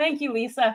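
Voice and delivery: voice catching, choked up, on verge of tears. Thanking a listener by name while choking up. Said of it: "I'm gonna cry".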